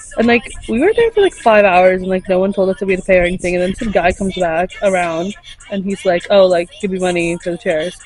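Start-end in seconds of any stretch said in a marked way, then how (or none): none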